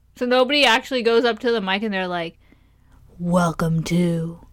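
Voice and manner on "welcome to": deliberately deepened voice. Wondering whether people at the mic fake it, doing a deliberately deepened voice. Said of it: "do they make their voice sound deeper".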